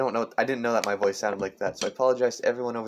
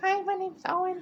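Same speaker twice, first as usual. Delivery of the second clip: put-on very high little kid voice. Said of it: "a little voice like".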